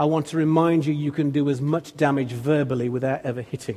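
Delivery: ordinary delivery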